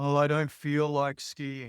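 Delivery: dropped, sunk, low vibrating tone. Demonstrating the voice in one's head, in a low vibrating voice. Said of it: "That's the low vibrating voice".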